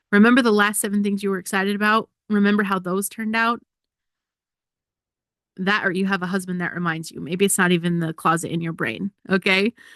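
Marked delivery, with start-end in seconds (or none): none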